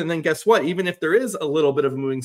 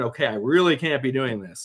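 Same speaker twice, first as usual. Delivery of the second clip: ordinary delivery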